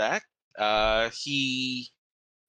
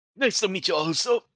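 put-on pitched-up elderly man's voice; 8 semitones higher, 3 dB louder than usual. Voicing the imp familiar Wink greeting the party: Wink in an old man voice. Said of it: "Sound like an old man".

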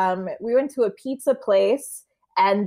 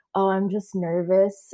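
put-on sexy voice, spoken from side of mouth. Retelling how a partner spoke during role play: imitating a sexy side-of-mouth line. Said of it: "out of the side of his mouth, real sexy".

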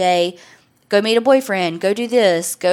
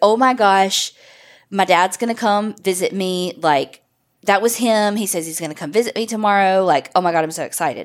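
ordinary talk, nothing marked

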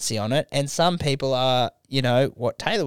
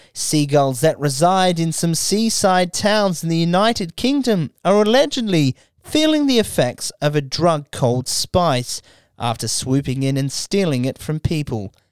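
little mock newsreader voice, higher; 3 semitones higher, 3 dB louder than usual. Reading a news article aloud to the co-host Taylor: little newsreader voice. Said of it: "in a little newsreader voice".

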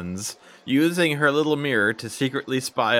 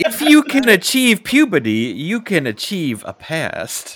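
raised, high put-on American southern accent; 7 semitones higher, 7 dB louder than usual. Quoting a movie line after being asked for a southern accent, in that accent. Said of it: "Where's your southern accent?".

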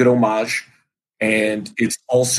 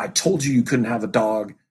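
mock-angry, put-on scolding tone. Retelling how a girlfriend woke her boyfriend and scolded him, mock-angry scolding. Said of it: "she's just like she's mad".

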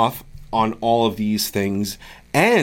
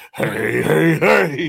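rough, pitched-up cartoon voice; 5 semitones higher, 3 dB louder than usual. Joking about how a greeting sounded: Fat Albert voice. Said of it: "It was like, uh, Fat Albert".

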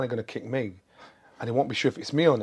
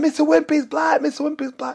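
put-on children yelling, very high-pitched; 7 dB louder than usual. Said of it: "go outside and shout".

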